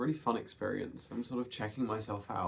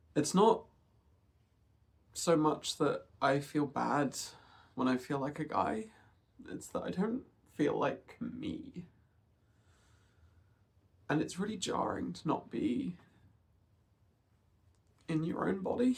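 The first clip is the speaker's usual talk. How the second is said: on the verge of crying, higher; 3 semitones higher than usual. Talking about not feeling like yourself in your body, holding back tears. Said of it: "I'm gonna try not to cry too much in this video".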